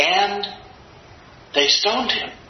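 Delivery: casual, offhand, tossed-off like an afterthought.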